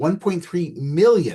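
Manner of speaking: "million" stressed, slow and drawn out.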